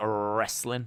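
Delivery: wrestling pronounced with a Southern US accent. Describing how wrestling was said in the South: Southern accent on 'wrestling'. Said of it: "I say it that way on purpose because that was kind of how it was said in the South".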